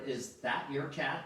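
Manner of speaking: ordinary talk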